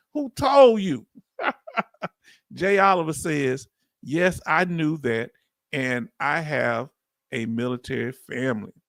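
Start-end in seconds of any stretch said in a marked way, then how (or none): 0.1-1.0 put-on voice, pitched very high. Repeating the question who told you, in a Malcolm X voice. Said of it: "in the voice of Malcolm X".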